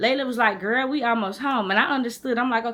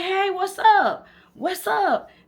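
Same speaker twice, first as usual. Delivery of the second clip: acted-out, drawn-out, pitched-up hollering; 11 semitones higher, 3 dB louder than usual. Retelling calling out to guys driving by, retelling a yell. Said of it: "I'm just yelling at these dudes".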